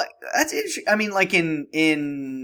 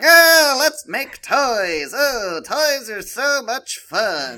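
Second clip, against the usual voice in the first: high, grating, very slow voice, "fun" stretched out; 8 semitones higher, 4 dB louder than usual. Mocking how Santa's elves sound, grating high Santa's elves voice. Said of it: "the high pitched, awful nails on a chalkboard voice".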